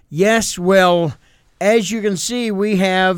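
very serious, grave newscaster voice, loud and high. Recalling TV reporters measuring a small snowfall with a ruler, mock-serious reporter tone. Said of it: "in the most serious tones".

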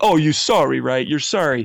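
mock big guy voice, yelling, jabbing and accusing. Retelling a huge dude on a train yelling at a man: imitating a man yelling. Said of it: "yelling at this guy".

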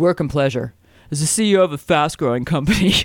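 laid-back surfer voice. Doing accents for a co-host while reading aloud, in a Spicoli voice. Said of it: "this is my Spicoli".

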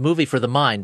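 plain

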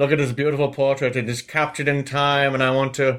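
put-on old-timey British accent. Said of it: "that's the accent you remember them using".

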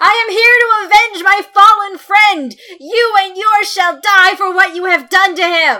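very high, loud crying-out. Her character jumps onto the catwalk edge to take the spotlight, crying out. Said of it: "she's going to cry out".

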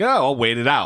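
plain

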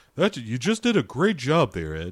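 swooping thrilled voice. Imitating a film character praising Ed: imitating Bill voiced like Hank Hill. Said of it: "your Bill voice is your Hank voice".

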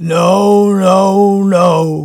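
loud, gruff, growled voice. Reading a story aloud, the narrator voices the harmonica player's reply, growled. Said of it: "he growls".

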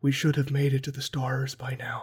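hushed whisper. Describing how he plays his villains, the speaker demonstrates, whispering. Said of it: "just kind of the whispering".

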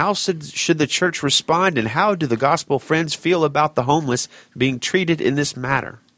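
high, formal, professional newsreader-style reading voice. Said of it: "Why'd you read it in that voice?".

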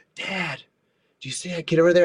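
quiet half-whisper. Retelling what a daughter said at the park: imitating daughter half-whispering. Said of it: "she's, like, whispering".

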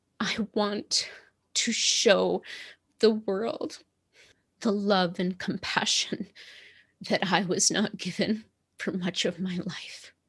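breathy, broken-up, halting, tearful words. Opening up in a conversation about being the change, teary-eyed. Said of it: "I'm teary-eyed with this".

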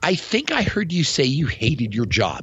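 very condescending, patronizing, talking-down tone. Paraphrasing someone who says they hate their job, very condescending tone. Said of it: "I paraphrase in a very condescending way".

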